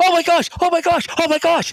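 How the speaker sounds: put-on screaming announcer voice. Retelling a field goal call, imitating the color commentator screaming. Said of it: "two people just screaming and yelling".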